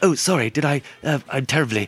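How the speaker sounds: put-on English accent. Showing how Americans imitate an English person: Hugh Grant impression. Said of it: "they either sound like Hugh Grant and sort of like".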